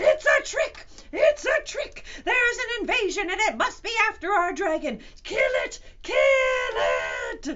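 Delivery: very high, very loud, shrill, booming, enraged crowd yelling. Narrator voices a crowd of furious jungle animals; furious animal mob yelling. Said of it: "Then he could hear seven furious tigers, and one raging rhinoceros, and two seething lions, and one ranting gorilla, along with countless screeching monkeys, led by two extremely irate wild boars, all".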